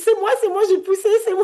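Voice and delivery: play-acted very high, loud, thrilled and proud exclaiming. Recounting her labor, the speaker replays her own words: retelling her proud excitement. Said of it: "J'étais trop fière".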